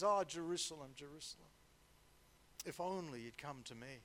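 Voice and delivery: put-on heavy-hearted sigh. Acting out words spoken on the mountainside; retelling with a heavy sigh. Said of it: "with a heavy heart and a sigh in his voice says".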